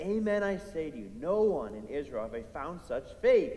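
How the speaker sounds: ordinary talk, nothing marked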